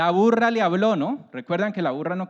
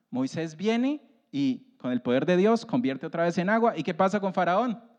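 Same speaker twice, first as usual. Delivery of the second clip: normal talking voice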